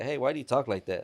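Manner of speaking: plain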